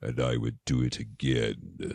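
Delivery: very low, hushed, sinister evil murderer voice. Describing how the accused turns out to be the murderer on tv mysteries, imitating an evil voice. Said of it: "It's like the evil voice".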